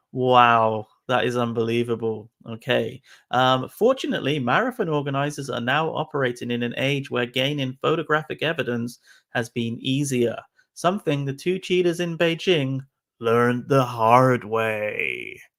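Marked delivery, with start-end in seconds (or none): 10.8-15.4 corny, cheesy tv crime-drama narrator voiceover. Narrating how marathon cheaters got caught: cheesy cop-show delivery. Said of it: "That's sounded really cheesy".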